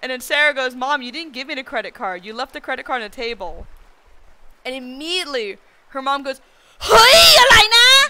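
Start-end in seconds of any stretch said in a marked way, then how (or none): 6.8-8.1 very loud, shrill, high-pitched outburst. Retelling how a girl's mom reacted right there in the line, called out loud. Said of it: "out loud in the line".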